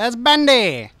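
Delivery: loud, high old-timey cartoon voice. Looking at a game together, the speaker points out a character in an old-timey animation voice. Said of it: "I just did like an old-timey animation voice".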